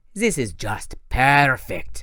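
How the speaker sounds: smug, triumphant, gloating. Reading a villain who has ambushed the heroes: gloating. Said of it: "the Manticore gloated".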